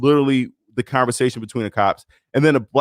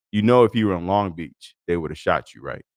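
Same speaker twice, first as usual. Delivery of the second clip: mock low, dead-serious, deadpan cop delivery; 6 semitones lower than usual. Retelling what a cop said to the speaker, retelling the cop's deadpan line.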